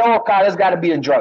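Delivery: plain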